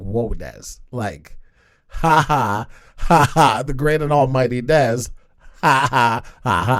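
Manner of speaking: play-acted laughter dragged slowly through the words. Retelling a friend's reaction on a phone call, imitating a friend laughing. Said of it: "he's laughing".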